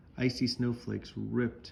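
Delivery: ordinary delivery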